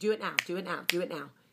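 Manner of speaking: play-acted, impatient, insistent nagging, repeated over and over. Retelling the morning rush to get others in the car, mock-impatient demand. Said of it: "I'm like".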